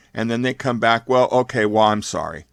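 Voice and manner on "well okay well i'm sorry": put-on insincere, grudging voice. Acting out a child's empty apology to parents: imitating an insincere apology. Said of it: "their apology, there's nothing behind it".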